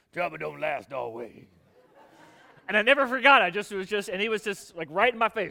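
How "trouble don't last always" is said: put-on gruff, deep Louisiana man's voice, much lower. Retelling what an old man in the next pew told him, gruff deep Louisiana voice. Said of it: "this old, gruff, deep Louisiana voice".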